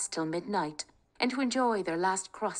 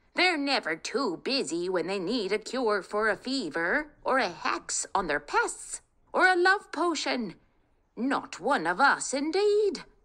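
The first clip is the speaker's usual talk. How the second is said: put-on high, shrieking, irritated old witch voice; 6 semitones higher than usual. Narrating a story, voicing the witch speaking to Kate: screeching old witch. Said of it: "screeched an old woman, ... Kate was lost in her thoughts of him when suddenly a screeching voice shattered the peace. ... screeched an old woman".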